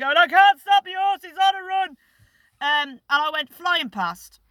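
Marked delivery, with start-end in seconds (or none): 0.2-1.9 high, frantic, desperate, panicked yelling. Retelling being on a bolting horse, imitating screaming at dad. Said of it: "I started screaming and shouting at me dad".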